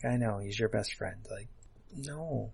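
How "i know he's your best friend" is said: mock apologetic, sympathetic tone, lower and quieter. Quoting a film line the way the actress says it: imitating a sympathetic delivery. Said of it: "She almost says it like she feels bad".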